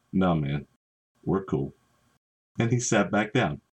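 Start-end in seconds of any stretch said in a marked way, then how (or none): 0.1-1.7 acted, low, meek, sheepish backing down. Retelling how Mr. Big Mouth backed down when confronted, mimicking his sheepish reply. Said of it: "He very sheepishly said".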